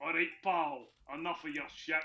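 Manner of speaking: attempted Glaswegian accent. Retelling how someone tried to sound Glaswegian, in an attempted Glasgow accent. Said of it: "He tries to do the kind of Glasgow accent".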